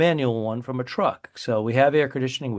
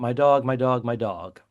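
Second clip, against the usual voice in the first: mock panicked, drawn-out cry, repeating herself. Retelling a passenger wigging out over her dog on a plane: imitating a panicking woman. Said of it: "she starts wigging out".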